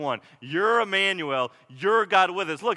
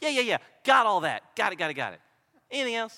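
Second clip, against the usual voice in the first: put-on smug, self-righteous tone; 2 semitones higher than usual. Telling a story, acting out the self-righteous guy's reply about the law: mock-smug. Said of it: "just so smugly goes".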